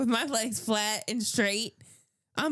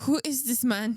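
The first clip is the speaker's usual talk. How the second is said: fake accent sounding German. Telling a story of being wheeled in, voicing somebody there in a German-sounding fake accent. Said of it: "No, that's German".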